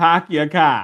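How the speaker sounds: put-on Boston accent. Quoting someone with a Boston accent: imitating a Boston accent. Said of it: "He said, he said, he said".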